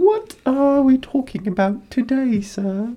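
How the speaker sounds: very high, squeaky little elf voice. After joking about music picks, speaker switches into a Dobby voice. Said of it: "Why do you sound like Dobby?".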